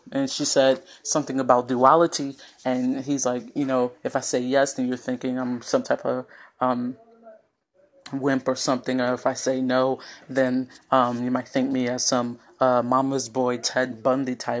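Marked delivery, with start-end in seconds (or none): none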